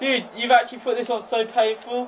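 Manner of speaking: very high-pitched, tearful, crying through real pain. Complaining to the other player about the painful peg: crying from pain. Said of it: "I'm crying. These tears are real".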